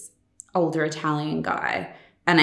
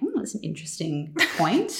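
put-on low voice, considered-sounding and swooping; 4 dB quieter than usual. Showing how she sounds when talking in a lower voice: imitating own lower voice. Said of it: "when I'm talking in a lower voice".

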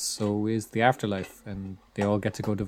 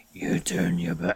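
deep, rough, creaky, gravelly voice; 3 semitones lower than usual. Retelling a film moment where the hero addresses children, Batman voice. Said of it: "he goes into his Batman voice basically".

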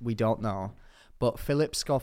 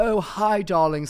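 posh, high-pitched, a bit loud raised voice; 8 semitones higher, 6 dB louder than usual. Retelling Charlotte Tilbury giving out an award: Charlotte Tilbury impression. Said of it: "And she was like".

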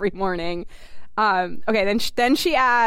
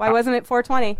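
ordinary talk

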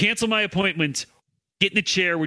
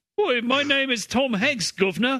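high, put-on British accent; 8 semitones higher than usual. Joking that Tom Hanks is secretly British: British Tom Hanks voice. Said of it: "That's what he sounds like".

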